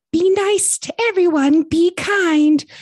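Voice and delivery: very high, loud, mocking sing-song squeak.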